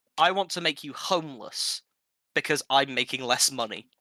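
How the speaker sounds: ordinary delivery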